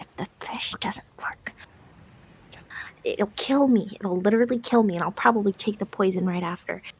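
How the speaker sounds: hushed whisper. Playing a character, explaining a plan in a scene: whispering. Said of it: "and I'm whispering".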